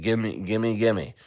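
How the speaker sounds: greedy, grabby, grasping pleading tone. Picturing old friends with their hands out: imitating greedy friends begging. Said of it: "they're gonna have their hand out and say".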